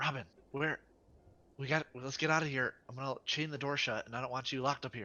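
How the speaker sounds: loud whisper shout. Calling in character to robin to get out: whisper shouting. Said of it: "I am going to whisper shout for Robin".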